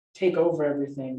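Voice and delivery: ordinary delivery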